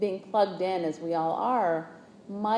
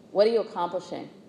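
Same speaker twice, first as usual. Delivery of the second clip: put-on, mock scolding voice. Recalling his father finding him coloring at six, retelling a scolding voice. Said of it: "he said in a really scolding voice".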